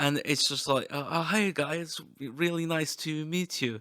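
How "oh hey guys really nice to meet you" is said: bad, awful, drawn-out Scandinavian accent. Act out a conversational, inclusive guy meeting people, in a really awful Scandinavian accent. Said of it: "with my really awful like really bastardized Scandinavian accent".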